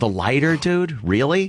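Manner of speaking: plain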